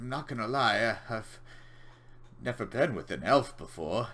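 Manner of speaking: very nervous, jittery, uneasy tone. A game master voices a character speaking to a half-elf player, in a nervous tone. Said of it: "he says in a very kind of nervous tone".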